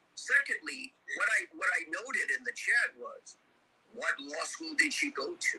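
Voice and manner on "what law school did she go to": mock snide, sarcastic, pitched-up quip. The speaker repeats a question they wrote in a chat, retelling it sarcastically.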